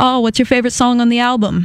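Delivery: rough attempted Australian accent. Retelling what people asked her on the phone, in an Australian accent. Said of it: "in their Australian accents".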